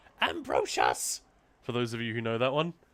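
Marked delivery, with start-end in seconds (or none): 0.2-1.2 shrill, very high character voice. Recalling an actor's role in the movie Labyrinth: shrill Sir Didymus impression. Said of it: "Sorry for the shrill impression".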